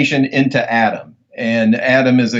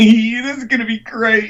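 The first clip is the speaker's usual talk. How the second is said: very high, gleeful, giggly tittering; 10 semitones higher than usual. Acting out the father's line from the movie scene: imitating a tittering father.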